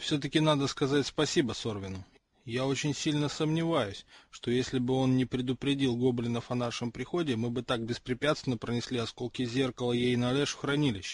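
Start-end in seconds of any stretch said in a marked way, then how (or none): none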